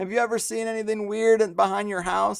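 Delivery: tearful, weepy, high crying voice. Retelling asking the neighbors about something weird: imitating own past crying. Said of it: "and I'm crying".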